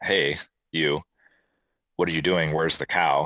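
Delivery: put-on, frustrated, grunting bull voice. Retelling how a bull across the lake grunted at them: imitating a frustrated grunting bull. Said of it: "just grunting at us, like".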